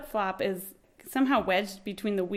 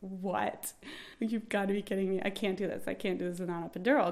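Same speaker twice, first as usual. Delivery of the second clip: put-on freaked-out voice; 8 dB quieter than usual. Recalling hearing she would get no epidural: retelling her own panic. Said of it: "I'm totally freaked out".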